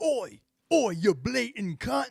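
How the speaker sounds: put-on British accent, high-pitched, slow and drawn out. Answering a friend's accent with a put-on uk accent. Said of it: "some U K shit".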